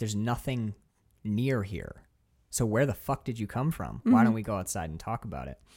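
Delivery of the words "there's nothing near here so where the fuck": ordinary delivery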